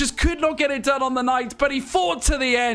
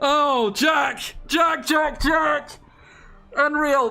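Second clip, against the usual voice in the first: very slow, strained voice on the brink of giving out. Reacting to the end of a race, calling out to another speaker: voice on the brink. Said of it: "My voice is on the brink".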